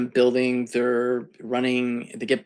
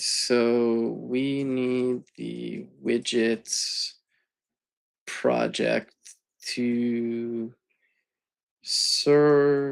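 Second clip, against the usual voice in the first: deliberately very slow delivery; 3 dB quieter than usual. While setting up the widgets project, the speaker describes the next step, very slow speech. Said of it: "I'm talking very slowly".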